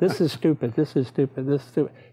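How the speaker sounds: plain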